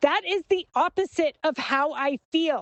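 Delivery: put-on very angry, unhelpful tone, high-pitched. Retelling own words in an argument with a friend: imitating own angry voice. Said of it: "in a very angry voice".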